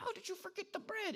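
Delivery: barely audible, very quiet, hushed whisper. Retelling disciples whispering to each other: imitating disciples whispering very quietly. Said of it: "whispering to each other very, very quietly".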